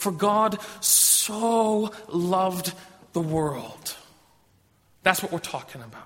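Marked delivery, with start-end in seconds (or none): 0.0-4.0 "so" with strong exclamatory stress. Quoting the verse to show the exclamation, strong emotional stress on so. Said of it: "the word so is the exclamation. And so we should say it this way".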